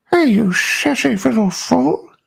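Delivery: drawled, very high-pitched and raspy voice. Trying to do the Family Guy pervert voice: Family Guy pervert voice. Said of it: "Let me see if I can do the pervert".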